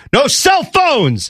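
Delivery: play-acted, very high, furious. Retell him turning around on the guys in the locker room, acting out someone getting angry. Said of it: "you can tell he's getting angry".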